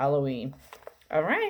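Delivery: ordinary delivery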